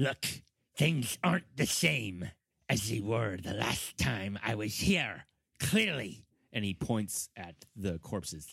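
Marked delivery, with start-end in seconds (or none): 0.0-6.2 rat-folk creature character voice. A game master voices the ratfolk guide answering a player, ratfolk guide voice. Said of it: "And he's saying this in rat folk. / and he looks back at you and he says, / He is going to lead you to this chamber that contains this door that he refers to as the singing door".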